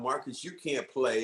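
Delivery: ordinary talk, nothing marked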